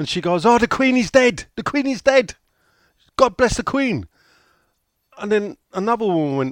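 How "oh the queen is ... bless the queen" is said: loud, high-pitched acted scream at the top of the lungs. Retelling a bus ride, a woman announces news to the other women; retelling a scream. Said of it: "She screamed at the top of her voice".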